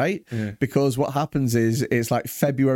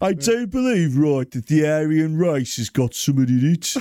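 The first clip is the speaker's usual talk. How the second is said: put-on forties-style Birmingham accent; 3 semitones higher than usual. Joining a bit as a 1940s German: put-on Brummy accent. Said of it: "let's try and do that".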